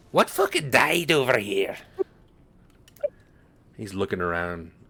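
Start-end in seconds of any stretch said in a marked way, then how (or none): 0.1-1.7 put-on high, elderly dwarf character voice. Voicing an elderly dwarf who stumbles up through a crowd: elderly dwarf voice. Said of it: "elderly dwarf ... he says".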